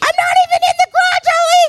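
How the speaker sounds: mock, very high-pitched, shrieking, screamed yell. Retelling how you reacted when the garage door hit the car: retelling a scream. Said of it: "I started screaming".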